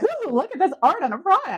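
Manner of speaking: high, loud, giddy gushing voice.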